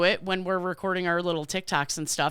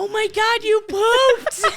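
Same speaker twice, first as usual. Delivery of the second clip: very high, loud, overjoyed delighted cry; 8 dB louder than usual. Taking a turn in a game of acting out reactions, acting happy. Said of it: "you're happy about it".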